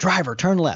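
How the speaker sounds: put-on authoritative yell. Retelling a tank commander's guessed order: imitating an authoritative command. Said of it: "in his most authoritative voice".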